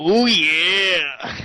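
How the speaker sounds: "yeah" stretched out long in wrestler style. Answering the other speaker's cue on live radio: Macho Man Randy Savage voice. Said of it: "Can I hit you with the Macho Man, "Oh yeah"?".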